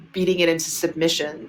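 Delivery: ordinary talk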